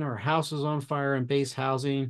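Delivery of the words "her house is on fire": ordinary talk, nothing marked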